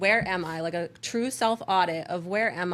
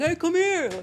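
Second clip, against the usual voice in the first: put-on hollering call, pitched up; 11 semitones higher, 4 dB louder than usual. Imitating a man calling to her across the street: imitating a man calling across the street. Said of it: "calling me across the street like".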